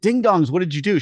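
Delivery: high, frantic, panicked yell. Retelling a car incident, the speaker re-enacts yelling at the kids. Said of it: "because I'm yelling".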